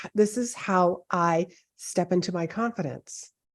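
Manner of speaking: ordinary talk, nothing marked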